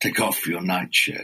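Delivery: low, growling snake voice. Narrator reads the serpent's line from his den: growling. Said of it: "the serpent growled".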